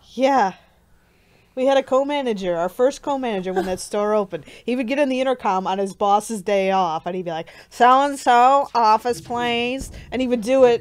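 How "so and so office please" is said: odd, loud, unusual announcer-style voice. Retelling a co-manager paging over the intercom: imitating the store manager's unusual voice. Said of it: "imitating the unusual voice of the store manager".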